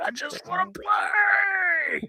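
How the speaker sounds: mock very high, very slow tearful sob. Acting out a movie scene of a straight player in the rain: crying in the rain. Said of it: "he's in the rain and he's, like, crying".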